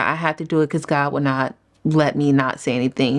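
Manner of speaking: ordinary talk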